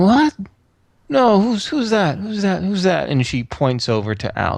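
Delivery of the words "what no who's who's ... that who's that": high, croaked, rasping voice. A storyteller voices a woman as royal visitors arrive, croaking. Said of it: "She croaks out".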